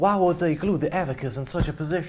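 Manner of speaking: put-on refined, genteel Southern accent. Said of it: "That's two southern gentlemen".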